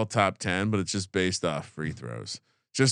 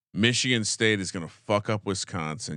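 ordinary delivery

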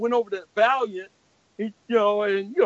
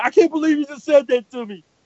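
mad, stung angry outburst, raised and high; 5 semitones higher, 6 dB louder than usual. Retelling Bob's reply to criticism of his work: imitating Bob angry. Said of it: "Bob got all mad at me".

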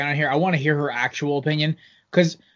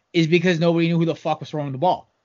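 normal talking voice

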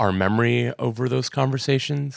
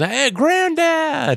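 mock very high, swooping, sing-song holler; 5 dB louder than usual. Retelling a character greeting his grandfather: imitating a yell. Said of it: "Mark sees him and yells".

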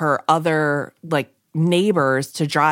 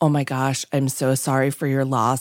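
put-on soft, hushed, gentle voice; 3 semitones lower than usual. Retelling how callers offered condolences after a loss, imitating a hushed, gentle tone. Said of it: "talking to you in the most like hushed gentle tone".

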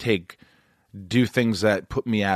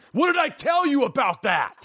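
shrill, sudden, furious yell, very high. Describing how a man who scared the speaker as a child would yell: imitating an angry yell. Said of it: "He could just turn like that".

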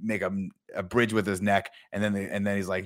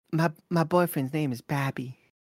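bad put-on Southern drawl, much higher pitch; 8 semitones higher than usual. Podcast hosts discuss X-Men voices; one tries it in an Anna Paquin Southern drawl. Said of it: "why are they making her do a southern draw?".

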